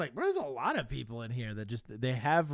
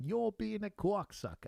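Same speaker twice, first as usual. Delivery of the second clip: very high-pitched put-on regional accent; 9 semitones higher, 4 dB quieter than usual. Repeating a line from the video in its regional dialect: imitating the regional dialect. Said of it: "This regional dialect is crushing me".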